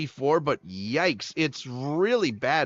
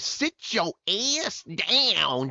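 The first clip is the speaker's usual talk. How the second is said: woman's voice, "down" stretched out slow and deliberate; 4 semitones higher than usual. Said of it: "in the blackest lady voice of all time".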